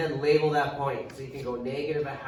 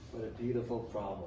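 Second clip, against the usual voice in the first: slightly sarcastic, soft and low. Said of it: "I'm being a little sarcastic".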